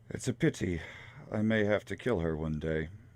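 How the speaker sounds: muttered aside, said half to himself. A narrator voicing a man after a woman storms out, muttering under his breath. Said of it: "then just kind of under his breath".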